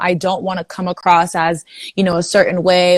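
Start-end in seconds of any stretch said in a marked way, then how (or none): none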